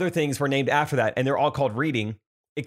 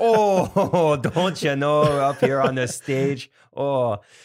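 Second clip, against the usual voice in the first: put-on very slow, drawn-out, loud Wisconsin accent; 4 dB louder than usual. Retelling teasing a woman called up on stage: mock Wisconsin accent. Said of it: "she had such a Wisconsin accent".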